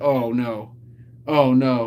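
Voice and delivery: very drawn-out, slow, sinking dread. Describing pushing it too far: imitating a sinking feeling. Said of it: "sinking feeling that's like".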